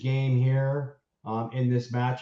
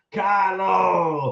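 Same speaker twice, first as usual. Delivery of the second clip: put-on belted French accent arena announcer voice. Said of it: "with a French accent".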